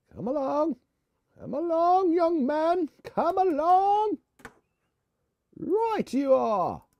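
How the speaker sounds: very high put-on British accent, loud and slow. Talking to oneself while working on something, in a put-on British accent. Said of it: "Why do we always talk in British?".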